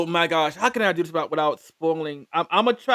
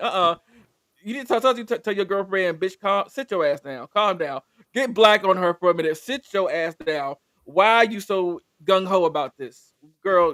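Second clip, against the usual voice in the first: ordinary talk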